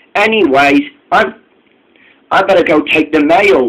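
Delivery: ordinary delivery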